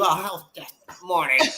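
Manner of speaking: mock angry, mad-sounding tone. Retelling a person greeting back after the door was held, imitating someone angrily saying good morning. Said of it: "how you gonna be mad as fuck telling me good morning".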